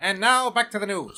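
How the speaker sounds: put-on old-time radio newsreader, transatlantic accent. Told to speak up, showing off a 1930s Mid-Atlantic announcer voice. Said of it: "I sound like an Atlantic voiced person from the thirties".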